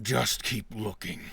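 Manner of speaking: low, dropped character voice. Voicing a second creature answering the first: much deeper voice. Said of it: "in a much deeper voice you hear".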